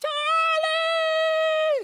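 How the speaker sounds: mock, very high call, stretched long. Retelling how his mother called him home: imitating mother's high-pitched scream. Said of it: "she would scream like no one else's business, a very high-pitched voice".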